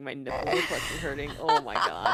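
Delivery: giggly speech, broken by laughter. Reacting to a joke while watching along, laughing while talking. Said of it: "I need to stop laughing".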